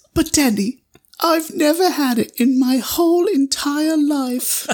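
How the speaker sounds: very high, slow, childlike put-on British accent. Retelling a kid answering his dad in a story, put-on British accent. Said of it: "That was my British accent".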